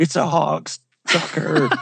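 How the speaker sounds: panicked, alarm-struck blurted exclamation. Retelling a friend's words after he caught a fish, imitating his panicked voice. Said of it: "he had this panic in his voice".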